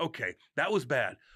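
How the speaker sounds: plain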